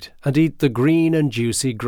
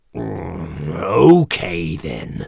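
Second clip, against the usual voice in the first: grunted, much lower; 6 semitones lower than usual. Narrator reading the troll's reply to the little billy goat, grunting. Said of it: "said the troll with a grunt".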